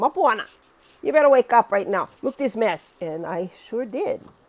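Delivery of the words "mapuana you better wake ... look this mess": very loud, scolding shout in mother voice. Speaker telling her story, quoting a warning to herself: imitating her mom's voice. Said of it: "in my mom's voice".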